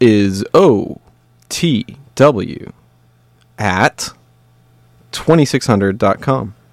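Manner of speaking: slow, deliberate spelling out with long pauses.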